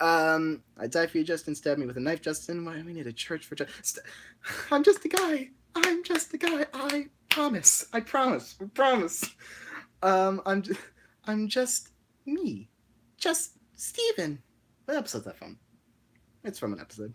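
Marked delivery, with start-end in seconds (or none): 4.7-14.4 character voice with pitch swooping all over. Doing character lines in Paper's voice. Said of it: "in Paper's voice?".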